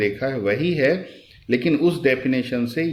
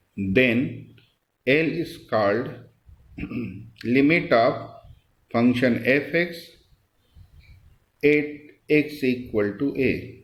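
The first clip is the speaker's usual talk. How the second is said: very slow, deliberate, dictation-like pace. Dictating a corrected definition for students to write down, speaking slowly. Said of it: "मैं धीरे धीरे बोलता हूँ।".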